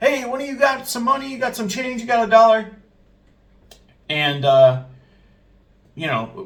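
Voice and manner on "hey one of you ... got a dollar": acted, high, raised hollering shout. Retelling a man at the register shouting at the other employees: retelling a shout. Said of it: "he starts shouting at the the other employees".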